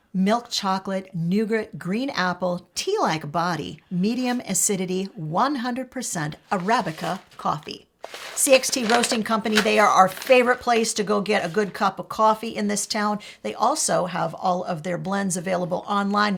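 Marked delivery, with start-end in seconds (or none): 0.1-7.8 radio announcer voice reading on air. Hope reads the coffee blend description aloud on the podcast: radio voice. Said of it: "This is my radio voice".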